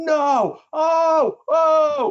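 very loud, shrill, excited screaming, put-on. Describing someone watching the TV, retelling an excited scream. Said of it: "literally screamed".

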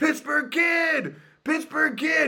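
very high, loud, mock excited yell. Retelling calling out to a golfer in a practice round: retelling own past yell. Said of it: "What the hell are you yelling at".

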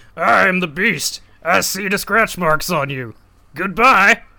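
very slow, put-on beast character voice. Describing how a story ends, the speaker voices the Beast: Beast impression. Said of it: "That's a really good impression".

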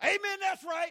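shrill shout at full volume, very high. Retelling a sermon where someone interrupted the preacher, retelling someone yelling. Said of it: "Somebody else yelled".

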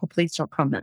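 soft, discreet half-whisper. Showing how to answer a comment subtly in a crowd: demonstrating a half-whisper. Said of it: "I'll kind of whisper it to them".

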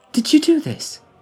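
amazed, astonished tone, very high-pitched. She asks him whether he did this: astonished. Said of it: "The astonishment in her voice".

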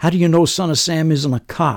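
loud, high-pitched yell.

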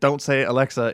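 usual speaking voice

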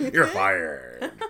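low, loud wrestling-promoter voice. Joking about WrestleMania coming up, doing a Vince McMahon impression. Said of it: "my terrible / awesome Vince McMahon impression".

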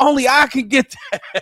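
high, hyped-up, excited put-on voice. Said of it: "He was like".

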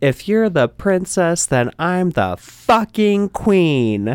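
mock scream, very high, shrill and drawn out. Retelling standing on a couch at a party: retelling a scream. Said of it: "and I screamed".

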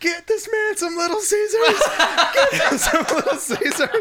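play-acted very high, loud, shrill yelling. Retelling calling for food while someone nearly faints: retelling own yelling. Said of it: "And I start yelling".

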